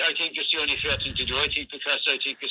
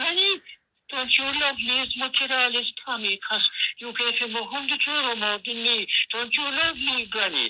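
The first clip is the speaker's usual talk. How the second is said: put-on, very high little kid voice; 9 semitones higher than usual. Retelling a plan to have the child confront Granny, imitating a child's voice. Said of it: "I put on the child's voice".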